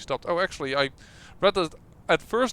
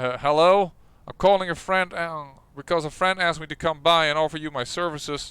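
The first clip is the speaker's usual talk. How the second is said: put-on voice of an older man. A caller speaks over the intercom: older male voice. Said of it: "you hear an older male voice".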